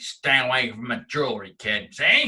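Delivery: put-on slow, old-time movie gangster voice. Retelling how a store worker spoke, like an old gangster. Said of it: "He was like an old gangster".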